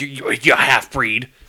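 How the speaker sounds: put-on angry outburst. Recounting a scene where a man talks to Spock, retelling an angry insult. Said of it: "all like angry".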